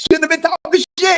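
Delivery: very high comedian voice. Repeating a line when asked to say it again: Katt Williams voice. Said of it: "In my Cat Williams voice".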